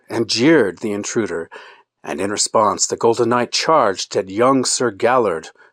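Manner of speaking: ordinary delivery, nothing marked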